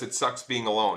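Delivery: ordinary talk, nothing marked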